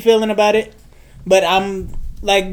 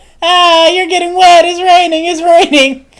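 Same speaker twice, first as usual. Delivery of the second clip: put-on playful, ribbing, teasing tone, raised and high; 9 semitones higher, 5 dB louder than usual. Retelling how a lady teased him as he walked to her house: imitating a lady teasing. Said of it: "Teasing me like".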